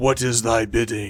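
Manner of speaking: loud resonant voice. A giant archon awaiting your command speaks in your head: booming voice in your head. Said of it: "you hear this voice in your head uh, booming out".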